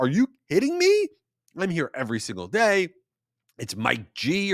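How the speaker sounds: indignant furious outburst, pitch swooping wildly. Retelling how a customer snapped at a barista: imitating a furious customer. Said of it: "And he lost it".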